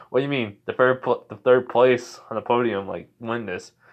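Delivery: plain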